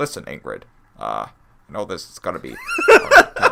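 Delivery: loud, earnest voice with swooping pitch. Imitating the principal about to give Ingrid hard news: serious Principal Pixie Frog voice. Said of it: "our serious, like, Principal Pixie Frog impression".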